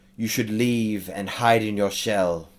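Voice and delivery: sibilant hissing delivery. A game master voices a creature casting Suggestion on a player: very hissy voice. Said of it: "in his uh, very hissy voice".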